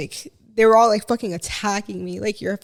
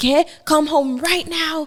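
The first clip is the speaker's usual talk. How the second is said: angry outburst with a raised pitch; 6 semitones higher than usual. Retelling how the speaker's mom blew up at them, imitating her outburst. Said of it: "she just started blowing up on me".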